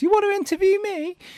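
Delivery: put-on tiny, very high little boy's voice. Retelling meeting a five-or-six-year-old boy, imitating Luca's tiny voice. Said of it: "I heard this tiny little voice".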